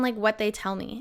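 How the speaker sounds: normal talking voice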